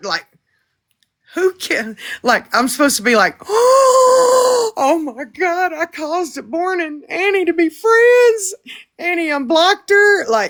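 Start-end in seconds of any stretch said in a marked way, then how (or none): 3.5-10.3 put-on very slow, high, stretched-out astonishment. Speaker acting out the reaction she was supposed to have, mock-shocked. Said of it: "I did not gasp".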